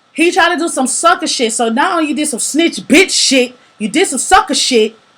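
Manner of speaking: loud angry ranting. Talking about an ex, really pissed off, in a raised angry voice. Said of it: "I'm raising my voice right now because I'm really like pissed off".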